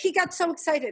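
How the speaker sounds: usual speaking voice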